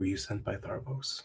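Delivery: speaking very low. Voicing a figure who offers an item instead of placing it down, very low voice. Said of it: "in a very low voice".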